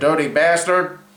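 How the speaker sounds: loud, badly done, put-on American accent. Saying a rude phrase in a James Cagney-style American accent. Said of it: "This pathetic American accent I've got".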